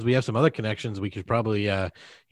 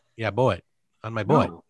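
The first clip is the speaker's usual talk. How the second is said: horrible, bad, put-on Canadian accent. Showing the others how Canadians pronounce vowels, in a bad Canadian accent. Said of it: "my Canadian accent".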